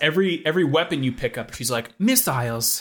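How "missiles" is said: put-on British announcer voice. Imitating the weapon announcer from a racing game: imitating Extreme G's British lady announcer. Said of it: "a lady voice that says something".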